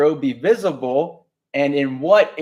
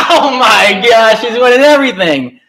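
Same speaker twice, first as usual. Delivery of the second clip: thrilled, high, loud, excited yelling into a microphone; 8 semitones higher, 11 dB louder than usual. Announcing winners on the mic, excited yelling. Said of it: "sorry for yelling in the mic".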